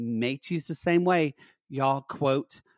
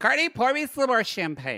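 put-on drunk belligerent voice, much higher pitch; 9 semitones higher than usual. In an improvised scene, Lexi orders Cardi around: drunk, belligerent Lexi. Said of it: "very drunk and belligerent Lexi".

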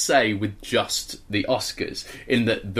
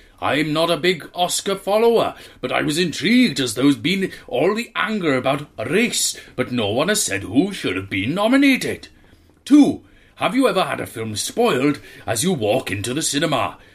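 fake Welsh accent, higher and louder; 6 semitones higher, 5 dB louder than usual. Reading out a listener's email on request: put-on Welsh accent. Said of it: "Welsh accent, please".

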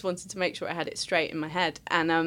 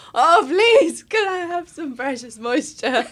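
very high, very loud, shrill, tearful crying; 10 semitones higher, 11 dB louder than usual. Recalling licking tears off the face while crying: retelling a crying plea. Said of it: "as the tears came down, going".

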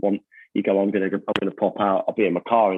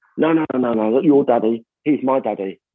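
mock defensive, insistent tone; 4 semitones higher than usual. Retelling how his son protested at another kid: imitating Teddy sounding defensive. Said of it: "Teddy was all defensive".

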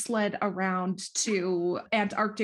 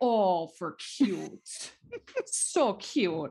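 put-on grandma voice. Describing a grandmother who always talked this way: imitating the grandmother's speech. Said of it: "learned to speak like my grandmother".

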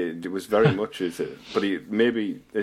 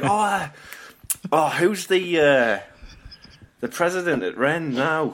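high, slow, put-on Liverpool scouse accent; 9 semitones higher, 4 dB louder than usual. Imitating the way a man asks a question, in a scouse accent. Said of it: "I'll try and do a scouse accent".

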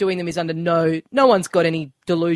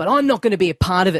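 put-on serious, dramatic delivery. Retelling a training-video scene with a nurse: imitating a serious, dramatic delivery. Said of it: "I had to get all serious and dramatic".

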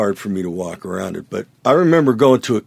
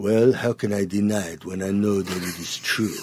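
put-on, jokey, fake French accent; 5 dB quieter than usual. Quoting a guitarist's reply to being called one of his heroes, in a fake french accent. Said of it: "in this fake French accent".

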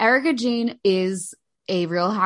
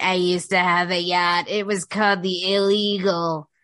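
put-on weird, drunk housewife voice. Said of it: "like, in her weird voice".

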